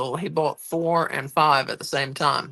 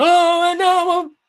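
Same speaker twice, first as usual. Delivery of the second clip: put-on wrestling announcer voice, higher and louder; 8 dB louder than usual. Chatting about wrestling commentators, doing a Vince McMahon impression. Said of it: "That's my Vince McMahon impression".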